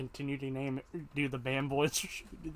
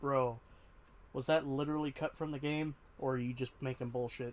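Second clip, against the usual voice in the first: ordinary talk, nothing marked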